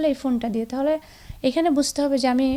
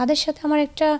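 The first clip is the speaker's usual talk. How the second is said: usual speaking voice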